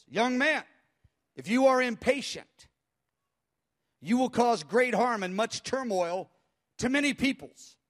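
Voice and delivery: loud, booming, thunderous delivery. Retelling what the Lord said to the speaker, thunderous voice of the Lord. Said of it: "This thunderous voice".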